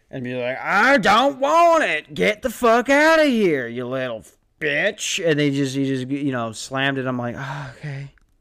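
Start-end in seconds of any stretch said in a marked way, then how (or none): 0.2-5.3 put-on old man voice, higher, louder, slower. Retelling how a grandpa shut the speaker down at the door, old man voice. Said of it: "Old people voice hurts my throat".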